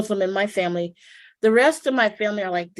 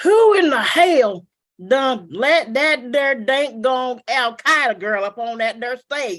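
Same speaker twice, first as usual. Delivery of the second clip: put-on slow Southern drawl; 4 semitones higher than usual. Retelling how a man in the back of the audience stood up: imitating an audience member's accent. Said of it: "let me do his accent".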